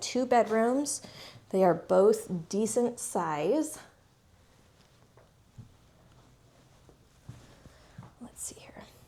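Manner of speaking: breathing heavily, out of breath. Walking into the bedrooms while showing a property, breathing heavily. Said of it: "I'm breathing so heavy".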